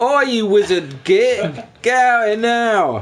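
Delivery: shouting in character. Playing a character who shouts at a house: in-character shout. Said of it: "I'm gonna look at his house and shout".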